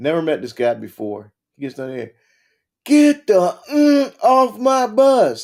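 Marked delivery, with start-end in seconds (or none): 2.8-5.4 acted-out shrill, very slow, high, drawn-out screaming bellow. Recalling a stranger in a Smokey the Bear hat boarding the bus, retelling a scream. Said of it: "He's screaming at me".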